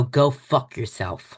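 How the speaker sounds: whispering. Retelling whispering in the mayor's ear at a parade: retelling a whisper. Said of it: "And I whisper in his ear".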